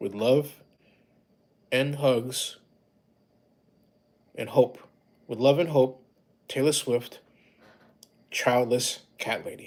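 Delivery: emotional, choked-up voice. Speaker reading a signed message aloud to viewers, choked up. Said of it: "excuse me for getting choked up".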